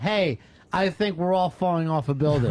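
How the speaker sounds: plain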